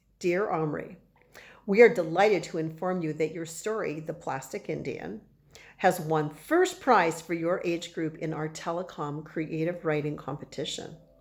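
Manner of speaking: ordinary delivery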